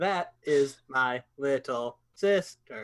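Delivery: put-on robotic voice. Acting out a scene where a robot asks about a woman: robot voice. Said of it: "We're talking like a robot".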